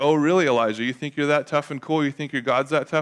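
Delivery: put-on taunting voice. Retelling a Bible story, acting out Jezebel taunting the prophet. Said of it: "Jezebel taunting Elijah, performed quote".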